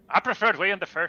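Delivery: failed fake Dutch accent, sounds Scottish. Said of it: "that was Scottish".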